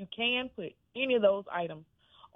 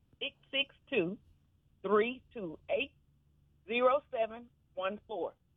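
slow delivery, higher; 3 semitones higher than usual. Told the phone number was said too fast, repeating it: saying the number slowly. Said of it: "Let me slow it down".

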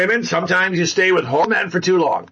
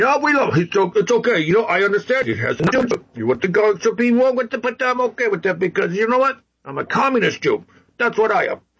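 rough, bad caricatured politician voice. Doing a self-described pretty bad impression: bad Bernie Sanders impression. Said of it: "That's my, uh, Bernie Sanders impression. Pretty bad, I know".

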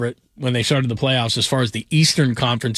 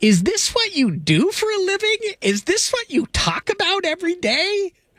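very high, swooping, sing-song, incredulous mom voice. Recounting his mom getting on the studio mic, impersonating his mom. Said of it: "My best mom impersonation".

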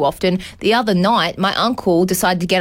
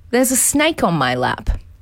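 imitated, very calm delivery. Retelling what a son said at a Mother's Day lunch, retelling a very calm remark. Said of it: "very calmly".

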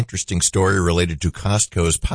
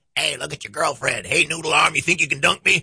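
obnoxious, pitched-up, wise-guy heckling; 8 semitones higher than usual. Remembering a mic'd-up dunk tank clown taunting people, imitating an obnoxious heckler. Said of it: "he'd have the most obnoxious voice".

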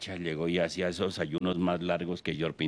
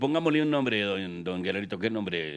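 ordinary talk, nothing marked

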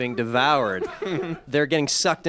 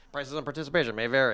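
imitated fast disclaimer voice, quieter; 6 dB quieter than usual. Imitating the fast-talking man at the end of commercials: John Moschitta fast-talking disclaimer voice. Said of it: "that guy at the end of every commercial".

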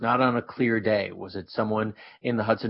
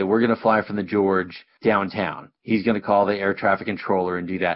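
ordinary delivery

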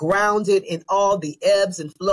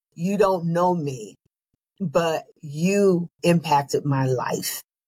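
imitated whisper; 2 semitones lower than usual. Retelling what a restaurant staff member said into the ear: imitating a whisper. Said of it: "he whispers in my ear".

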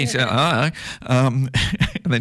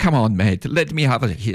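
put-on best-effort West Indian accent. Retelling what Brian said, West Indian accent. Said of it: "That's my best West Indian accent I can do".

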